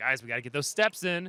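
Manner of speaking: usual speaking voice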